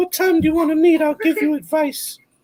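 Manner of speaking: very high-pitched eunuch voice. Imitating how a guy talked in Game of Thrones: high-pitched Game of Thrones voice. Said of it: "You have a high pitched voice".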